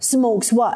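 scornful, dismissive, contemptuous tone. Retelling what the doctor said in reply, imitating a contemptuous tone. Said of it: "in a very contemptuous voice".

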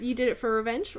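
ordinary talk

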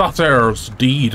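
put-on Irish accent. A player mid-game, aiming for Scottish but slipping into a put-on Irish accent. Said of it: "I don't know why I went Irish".

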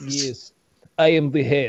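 low put-on Russian accent, dropped low. Recalling the listener playing a gangster, Russian accent as Sergey the Head Gumanov. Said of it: "doing our Russian accents".

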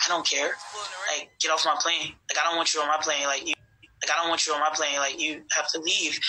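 ordinary talk

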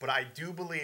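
usual speaking voice

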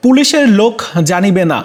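normal talking voice

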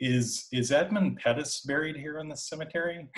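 mock innocent naive tone. Recounting a past conversation, quoting their own question, retelling a naive question. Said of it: "I just said kind of naively".

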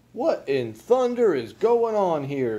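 loud, high-pitched, hot-tempered shouting outburst. Mr. frizzle sees the empty cradle rocking, shouting. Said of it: "He shouted".

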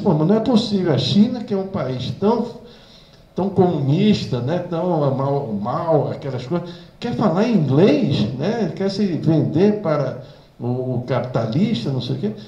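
incredulous exclamation, high-pitched and loud.

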